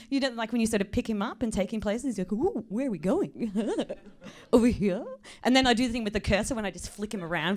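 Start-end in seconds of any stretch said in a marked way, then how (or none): 2.3-5.0 put-on excited, chattering little man voice. Doing the Google Maps guy being picked up and carried. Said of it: "the usual Google Maps guy".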